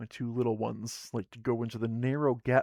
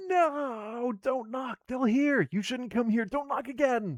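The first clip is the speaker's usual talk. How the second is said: very high, shrill screech, not drawn out; 13 semitones higher than usual. Narrator reading a voice behind a heavy wooden door, screeching voice. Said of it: "a voice screeches".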